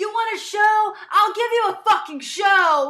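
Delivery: all-out shrill enraged screaming, very high, very loud. Recapping a show, retelling a contestant screaming at everybody, imitating the screaming. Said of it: "He's screaming at everybody".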